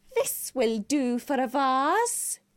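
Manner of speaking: nasty, spiteful witch voice, vase drawn out. A narrator reads a witch speaking as she picks up a jar, in a spiteful voice. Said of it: "said a spiteful voice".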